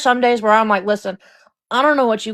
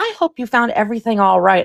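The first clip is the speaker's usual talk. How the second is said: fake, honeyed, polite customer-service voice. Describing rude customers, imitating the fake customer service Barbie voice. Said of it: "the fake customer service Barbie voice".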